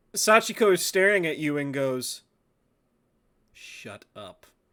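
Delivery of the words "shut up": whispered through tightly clenched teeth. Sachiko stares at you and speaks through clenched teeth. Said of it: "Teeth clenched".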